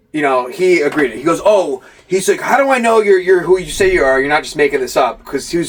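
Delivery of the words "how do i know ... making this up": guarded, defensive, challenging tone. Retelling what someone said when asked to film a promo: imitating a defensive tone. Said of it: "he was really, like, defensive about it".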